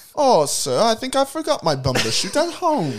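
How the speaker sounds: very high-pitched, put-on British accent. Joking about a word that sounds british: put-on british accent. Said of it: "We're gonna get so much crap for our accent".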